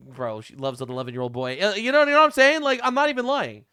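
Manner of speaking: ordinary talk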